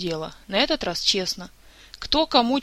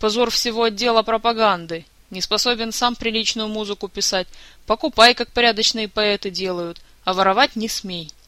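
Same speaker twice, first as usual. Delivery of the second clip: ordinary delivery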